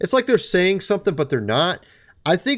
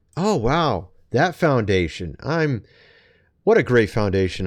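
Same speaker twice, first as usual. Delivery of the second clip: completely sarcastic, insincere admiring tone; 7 semitones lower than usual. Commenting on a board member's foundation: sarcastic. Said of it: "I'm being completely sarcastic there".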